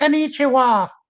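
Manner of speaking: squeaked out, very high pitch. While talking about Disney Tokyo, show how Mickey greets people there, in a Mickey Mouse impression. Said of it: "That was my Mickey impression".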